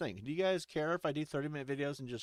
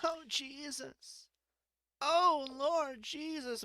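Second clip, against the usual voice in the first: shrieking, higher pitch; 10 semitones higher than usual. Acting out a scene where the nun character screams: screaming nun. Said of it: "She screams".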